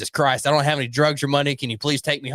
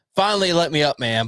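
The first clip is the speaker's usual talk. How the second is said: ordinary talk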